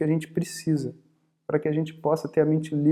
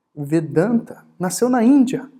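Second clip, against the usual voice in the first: stress landing in odd places, on the wrong words; 4 semitones higher, 6 dB louder than usual. Describing another speaker who emphasizes the wrong things, emphasis on the wrong words. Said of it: "Dando ênfase no lugar errado".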